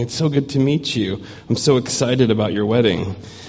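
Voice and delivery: ordinary talk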